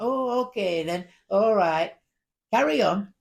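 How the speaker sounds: put-on very loud, strong northern Manchester accent. Retelling a man reading prayers as a latecomer arrives, very northern Manchester accent. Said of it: "A very northern Manchester accent".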